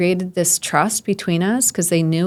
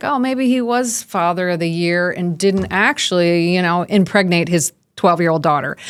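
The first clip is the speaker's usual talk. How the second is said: normal talking voice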